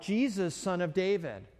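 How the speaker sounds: ordinary delivery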